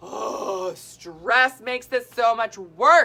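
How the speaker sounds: loud, slow, drawn-out yell with weight. Speaker mid-explanation to listeners, yelling. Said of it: "Sorry, I'm yelling".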